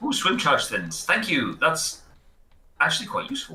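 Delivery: surprised, swooping pitch. Playing a game and finding a useful item, sounding surprised. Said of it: "You sound so surprised".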